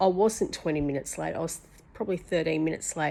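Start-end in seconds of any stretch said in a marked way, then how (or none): none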